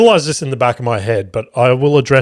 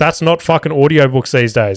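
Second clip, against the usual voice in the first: ordinary delivery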